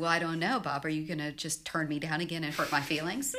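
playful teasing tone. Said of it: "playful with him".

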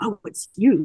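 put-on grumpy, pouty voice. Retelling a book scene where Rourke greets her again: grumpy, pouty Rourke voice. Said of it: "super grumpy and pouty".

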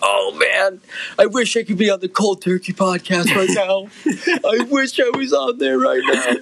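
high, weepy, sobbing through the words. Speaker imagining what an absent man is saying, imitating someone crying. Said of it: "he's crying, going".

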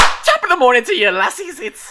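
very high, very loud, shrill, swooping yell. Doing Jacksepticeye's video intro for the other speaker: loud Jacksepticeye intro impression. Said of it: "headphones that blew out right there".

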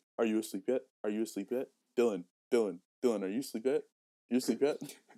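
pestering, insistent, over-and-over tone. Imitating how the other speaker keeps checking if someone is asleep. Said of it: "you'd be like".

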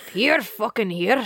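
put-on Scottish accent, leaning hard on the R. Repeating an accent attempt for another speaker, put-on scottish accent. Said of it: "I'm Scottish".

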